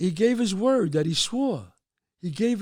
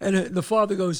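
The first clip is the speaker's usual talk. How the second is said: normal talking voice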